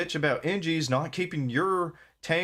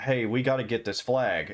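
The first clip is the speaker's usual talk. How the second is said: usual speaking voice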